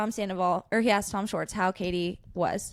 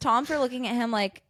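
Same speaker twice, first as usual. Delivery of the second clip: ordinary talk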